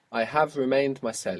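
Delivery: normal talking voice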